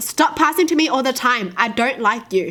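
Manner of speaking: ordinary delivery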